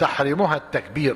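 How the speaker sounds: plain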